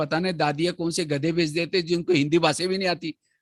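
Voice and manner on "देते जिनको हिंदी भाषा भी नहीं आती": normal talking voice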